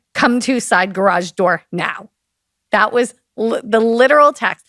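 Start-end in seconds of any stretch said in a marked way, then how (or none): 0.2-2.1 put-on mean, bitchy tone. Acting out the other person's literal text message, imitating a bitchy mean voice. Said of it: "that's a bitchy mean voice".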